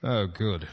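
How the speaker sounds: dry sarcasm. Answering a visitor who says he came to drain life essence: sarcastic. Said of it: "That sounded like sarcasm".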